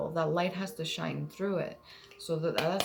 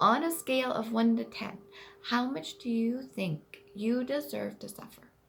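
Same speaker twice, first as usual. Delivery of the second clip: put-on high childlike voice of a young child; 6 semitones higher than usual. Reading an Inner Child question aloud: childlike voice. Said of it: "I'm going to say it in a childlike voice".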